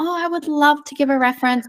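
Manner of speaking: mock bright, positive voice. Acting out a reference giver's reply, imitating an upbeat, positive tone. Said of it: "the tone's quite upbeat and it's positive".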